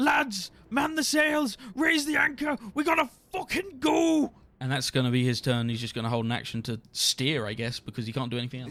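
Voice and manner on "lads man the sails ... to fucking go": very high, loud bellowing shout. A speaker voices Captain Broken Bones running to the helm to shout to everyone: Captain Broken Bones shouting orders. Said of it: "run up to the helm and shout to everyone".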